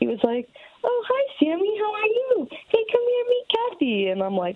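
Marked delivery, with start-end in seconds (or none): 0.8-4.1 put-on very high, sing-song, swooping baby voice. Retelling a date who talked to his cats, imitating Jake's baby talk. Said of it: "he kept doing this baby talk to the cats".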